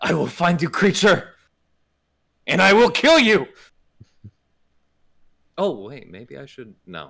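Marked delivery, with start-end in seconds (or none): 0.0-3.5 very high, loud battle yell in a fantasy tongue. After landing hits in combat, a player's character yells out: yelling in Zdarl. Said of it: "she's going to yell out in Zdarl".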